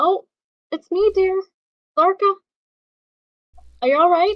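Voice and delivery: loud, high, yelled call. Answering a woman who yelled who's there, yelling. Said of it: "You guys are yelling at each other".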